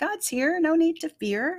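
high-pitched, gentle, calm reassuring voice. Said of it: "and calmly say".

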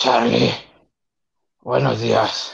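rough, croaky, sleepy just-woken morning voice. Retelling an early phone call, imitating Chelito's just-woken voice. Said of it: "quiero que cheques la voz".

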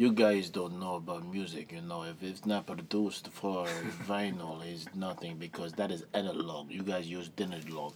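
put-on German accent. Retelling what your roommate from germany told you, in a german accent. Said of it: "and this is in his accent".

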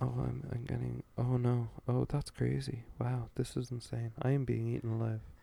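emotionless, flat, quiet, slow deadpan monotone. Reenacting how a character in a film said his dialogue: imitating flat, quiet, emotionless delivery. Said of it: "I'll do a reenactment of the dialogue".

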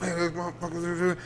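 soft, grumbling mumble under the breath. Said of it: "Mumbling under his breath".

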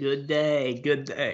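unconvincing, badly put-on Australian accent. Speaker tries out a greeting in a bad australian accent. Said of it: "I can't do an Australian accent".

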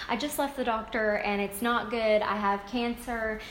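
normal talking voice

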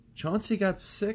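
very high-pitched, defensive tone. A woman answers the narrator's father's complaint, defensively. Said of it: "she began defensively".

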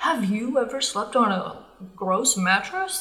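sales-pitch commercial announcer voice. Showing how a second-person recording sounded: imitating a sales-pitch commercial voice. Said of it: "have you ever seen commercials where it's like".

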